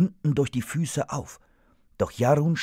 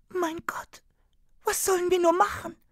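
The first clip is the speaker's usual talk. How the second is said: very high, scared, frightened cry. Reading a character's line in a story, shut in a freezer: frightened. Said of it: "fragte Marzelka erschrocken".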